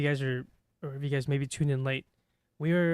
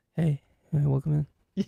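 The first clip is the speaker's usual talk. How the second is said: mock shy, timid voice, louder; 5 dB louder than usual. Acting out a nervous greeting after feeling self-conscious: pretend timid greeting. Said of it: "You just feel really, like, timid about it".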